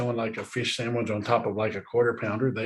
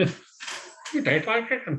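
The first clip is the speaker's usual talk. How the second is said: very high, squeaky little creature voice; 10 semitones higher than usual. Joking with another speaker about lobsters tasting with their feet, lobster impression voice. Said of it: "my impression of a lobster".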